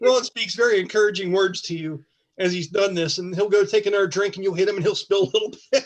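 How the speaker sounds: normal talking voice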